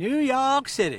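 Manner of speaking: very loud put-on southern US accent. A host introducing a guest on a live show, in a southern accent. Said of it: "you did a southern accent there".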